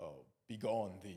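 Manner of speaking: low, deep, theatrical put-on manly voice. Retelling playing a female role as a man: imitating own deep stage voice. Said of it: "talking like that, like, in a deep voice".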